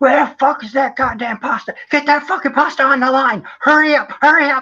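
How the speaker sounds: very high, shrill, furious screaming rage. Retelling a kitchen boss screaming at a cook: imitating someone screaming. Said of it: "he comes screaming at this kid".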